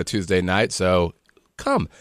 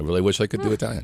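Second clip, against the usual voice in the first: ordinary talk, nothing marked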